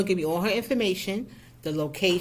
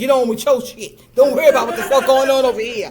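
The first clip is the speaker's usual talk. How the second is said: put-on loud, full-volume, shrill New York accent; 6 semitones higher, 11 dB louder than usual. Retelling what a woman said, redone in a new york accent. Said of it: "That's what she said, but with an accent".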